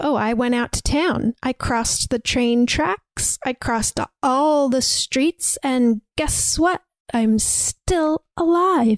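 very defiant, daring, challenging tone. Retelling a character's words on walking in the front door: imitating a defiant retort. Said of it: "says very defiantly".

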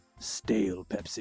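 secretive quiet tone. After looking around both ways, the brother speaks in a lowered voice. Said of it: "He lowers his voice".

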